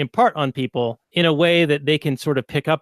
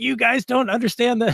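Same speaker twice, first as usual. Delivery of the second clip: mock yelling, raised and pitched up; 8 semitones higher than usual. Quoting a past guest who heard the episode, the speaker is retelling yelling at a phone. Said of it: "I was like yelling at my phone".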